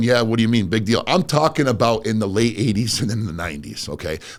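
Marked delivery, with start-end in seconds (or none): none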